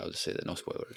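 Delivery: soft, hushed, conspiratorial whisper.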